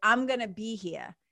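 ordinary talk

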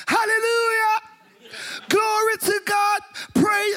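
mock very high, drawn-out hollering. Retelling hearing a father in a hospital ward: imitating a father shouting praise. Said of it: "Every time he shouts hallelujah".

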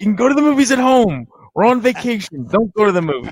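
loud mock yelling. Retelling friends scolding about going to the movies on vacation: imitating a friend yelling. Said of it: "My friends would yell at me".

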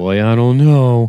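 loud, slow, anxious, uncertain nervous tone. Retelling a TV scene, quoting Billy: imitating a nervous speaker. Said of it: "Billy's nervous".

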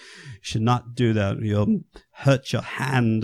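put-on slow, proper English accent. Quoting an English doctor giving a warning, in an English accent. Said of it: "the best English accent you've ever heard".

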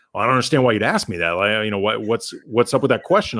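play-acted, really defensive, touchy tone. Retelling a coach's answer to a question before a game: imitating defensive D'Antoni. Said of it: "really super defensive with me".

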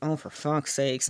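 muttered aside, under the breath. Retelling what a fan's wife said on a glacier tour: imitating someone muttering. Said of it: "She mutters".

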